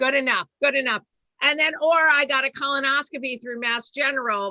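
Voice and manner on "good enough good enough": put-on Boston accent. Imitating a mortgage broker in a bit about the accent: imitating boston accent. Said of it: "riff here about the Boston accent".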